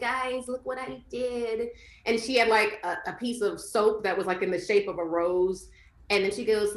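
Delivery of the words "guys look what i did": put-on soft, slow baby talk. Describing a woman in a video who talks in a baby voice, imitating her baby voice. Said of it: "she like speaks in like a baby voice".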